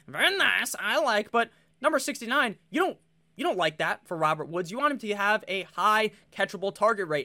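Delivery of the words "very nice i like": put-on comic Kazakh character voice, higher. Showing the bit done when saying the number sixty-nine: Borat voice. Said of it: "my Borat voice".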